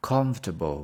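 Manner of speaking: comfortable with heavy stress on first syllable COM. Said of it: "we stress on the first one".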